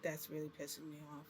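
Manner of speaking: hushed half-whisper under the breath, barely audible. Retelling own reply to him in a story: imitating own past half-whisper. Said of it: "And I whispered it".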